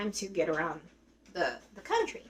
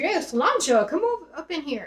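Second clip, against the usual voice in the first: put-on loud, high, barroom-style Irish accent; 5 semitones higher, 6 dB louder than usual. Retelling what a guy at a Guinness bar said: Irish accent. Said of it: "Irish accent, he was like".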